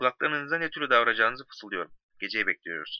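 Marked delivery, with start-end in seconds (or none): none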